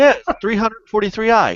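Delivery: high, clueless coworker voice.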